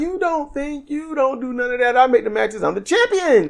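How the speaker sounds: high, soft, bossy and dismissive delivery. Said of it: "Athena's like".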